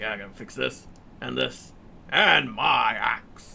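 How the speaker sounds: slow, gruff, rough-edged raspy voice. Teasing a co-host by repeating their line, imitating a gruff voice. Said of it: "you were doing your gruff voice there".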